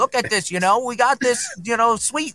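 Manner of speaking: bad fake New York accent. Retelling how he showed off the video later, in a bad New York accent. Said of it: "I can't do that New York accent".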